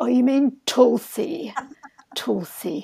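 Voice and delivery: put-on disdainful, superior tone. Retelling a shop worker correcting the speaker's pronunciation: mock-haughty correction. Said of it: "very haughtily corrected me".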